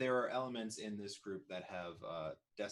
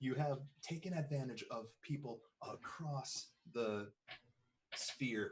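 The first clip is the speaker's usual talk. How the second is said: acted, pitched-up, angry, furious screaming yell; 5 semitones higher than usual. Confronting a man in a game scene: screaming in character. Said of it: "I just start screaming".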